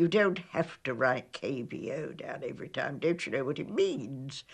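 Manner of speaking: mock colonel voice, exasperated and very irritated. Retelling what the colonel said about writing K B O down: imitating someone irritated. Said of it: "said to me in a very irritated voice".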